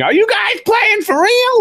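very high scream, climbing up in pitch. Retelling what someone asked in the middle of a crowd: imitating Cole screaming. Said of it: "he was screaming".

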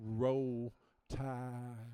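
put-on slow Alabama accent. Joking about talking Alabamian to Alabama fans: put-on slow Alabamian talk. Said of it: "Sometimes you have to talk slow".

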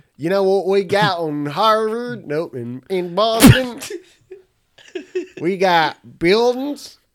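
put-on very high, very loud Southern accent with sliding pitch. Improvising as someone from Boston, slipping into an accidental Southern accent. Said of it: "I went southern for some reason".

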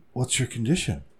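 dazed, trance-like delivery. Reading a joke aloud, the woman asking Phil's condition: as if in a trance. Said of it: "asked as if in a trance".

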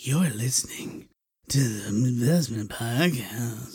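low, sexy, seductive woman's announcer voice. Describing the woman announcing a podcast's intro: imitating a sexy woman's voice. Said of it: "a very sexual woman person saying".

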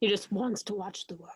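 put-on, deliberately overdone, bad dramatic delivery. Speaker discussing Ledger's Joker quotes the famous line, bad dramatic voice. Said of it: "That was my bad dramatic voice".

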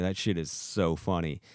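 plain

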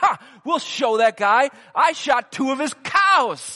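very loud, shrill, furious gloating yell. Telling a story, quoting a red-faced friend after two gunshots: retelling an angry outburst. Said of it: "his face is just red with anger".

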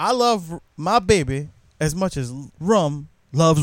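normal talking voice

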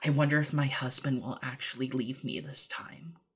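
hushed, soft, very quiet half-whisper. Voicing a mannequin heard aloud in a player's head: half-whisper. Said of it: "and out loud in a whisper".

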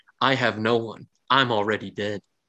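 painfully monotonous robotic drone. Speaker voices Kick the Click's reply, painfully monotonous like a computer program. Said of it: "the most painfully monotonous tone, as if the computer program, like Siri, read it back to you".

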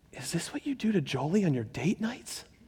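very soft, very quiet, barely-there hushed voice. Retelling what they heard the Lord say in the car, very quiet voice. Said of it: "I just heard the Lord very quietly go".

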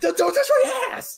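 put-on very high, loud, terrified screaming. Retelling someone trying to touch them from behind, retelling screaming in fear. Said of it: "So I was just screaming like".

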